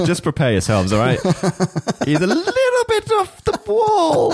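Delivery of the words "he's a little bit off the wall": very high, odd, silly put-on voice. Quoting how a fellow Gallifreyan describes him, in a weird put-on voice. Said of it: "That was just me doing a weird voice".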